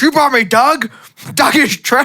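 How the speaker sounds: very high yell, thoroughly fed up. Retelling a scene where Dracula is dissatisfied with his meal, imitating Dracula yelling. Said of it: "he's yelling about how bad these people".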